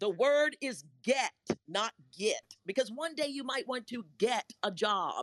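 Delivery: strict, high-pitched yelling. Speaker recalls his mother correcting his speech from the window: imitating mother yelling. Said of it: "My mother would yell out the window".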